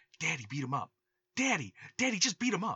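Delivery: whispering. Retelling a movie scene where the daughter urges her dad: imitating a whisper. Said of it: "keeps whispering".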